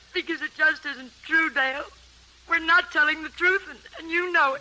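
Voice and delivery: tearful voice, crying through the words. Answering the other speaker, who asks why they are crying: crying while talking. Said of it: "why are you crying?".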